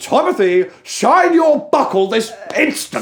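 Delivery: very loud, piercing, shrill scream. Recalling how you and the listener screamed this on the trailer, retelling a scream. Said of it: "me and you were screaming on the trailer".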